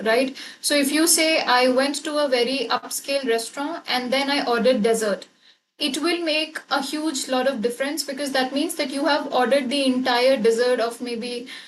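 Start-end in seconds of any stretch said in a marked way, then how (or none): none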